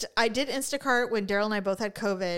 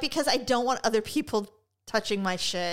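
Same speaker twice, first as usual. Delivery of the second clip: plain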